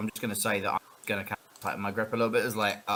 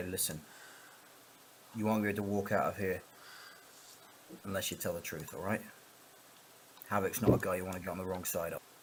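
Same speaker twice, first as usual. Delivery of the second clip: very soft, quiet, low hushed whisper; 2 semitones lower, 9 dB quieter than usual. Explaining how they will warn someone to tell the truth, whisper. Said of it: "I'm going to whisper".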